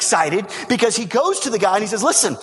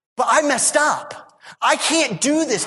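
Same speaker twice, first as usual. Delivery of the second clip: mock hopeless, despairing, defeated tone; 3 semitones higher than usual. The speaker acts out churchgoers' reaction to being invited into god's presence: acting out a despairing reaction. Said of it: "and our reaction is".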